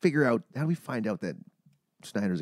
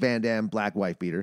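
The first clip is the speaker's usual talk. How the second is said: ordinary talk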